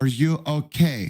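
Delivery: terrible put-on Dutch accent. Speaker retelling a woman asking him if he was okay, in a terrible Dutch accent. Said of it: "that was a terrible Dutch accent on my part".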